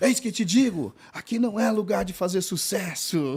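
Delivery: high, slow prophetic voice. Retelling what a missionary said at a church, claiming God spoke: imitating a missionary's changed prophetic voice. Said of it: "Mudou a voz?".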